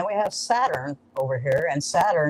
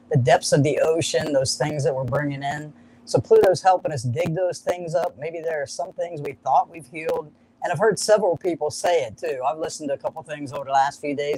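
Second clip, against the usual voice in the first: ordinary delivery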